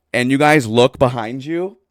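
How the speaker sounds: ordinary delivery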